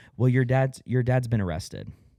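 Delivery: casual, just-like-that delivery. Retelling a mother's call about an arrest: imitating a matter-of-fact tone. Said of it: "Says it just like that".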